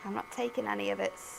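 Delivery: mock stern mum voice, playful scolding tone. Scolding a cutting machine that won't cooperate: mock stern mum voice. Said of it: "That was like a mum voice".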